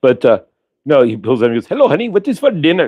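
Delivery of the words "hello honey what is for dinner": put-on Indian accent with very high-pitched voice. Quoting a movie character's line practiced over and over, imitating an indian accent. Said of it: "until I got that accent to the teeth".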